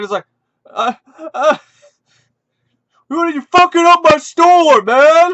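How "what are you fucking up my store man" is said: acted out raised, high-pitched angry yell. Speaker retelling a bodybuilder store owner confronting him, imitating an angry shout. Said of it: "he like gets pissed".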